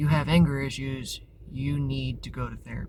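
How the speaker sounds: normal talking voice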